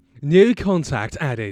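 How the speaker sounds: put-on British accent. Asked for a British voice, performing the phone agent's line: British voice. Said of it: "British voice".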